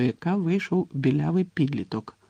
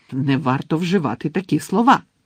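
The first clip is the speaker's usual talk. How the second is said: raised, outraged, indignant voice; 5 dB louder than usual. A shop owner reacting to a customer's remark in her shop, indignant. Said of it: "обурилася мадам Малкін".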